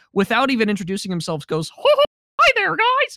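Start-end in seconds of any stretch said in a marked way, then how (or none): 1.7-3.1 put-on cartoon mouse voice, much higher, slower. Retelling how a tour guide's friend greets the group, perfect Mickey Mouse voice. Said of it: "in a perfect Mickey voice".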